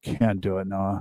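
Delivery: put-on deadpan, very low, soft, expressionless. Retelling Steve refusing his request about the show, imitating Steve's deadpan reply.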